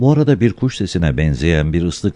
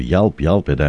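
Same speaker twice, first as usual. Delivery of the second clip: ordinary delivery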